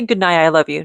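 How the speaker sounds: ordinary talk, nothing marked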